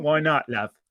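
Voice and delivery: put-on, fake English accent. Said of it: "I just did him in an accent".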